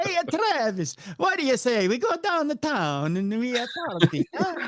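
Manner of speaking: very high, drunk put-on Italian accent. Imitating Rocky when he's drunk: imitating Rocky drunk, Italian accent. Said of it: "That's pretty much Rocky when he's drunk".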